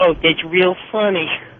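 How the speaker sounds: put-on, very disgusted voice. Retelling a phone call, imitating a very disgusted voice in the background. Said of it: "this very disgusted voice in the background".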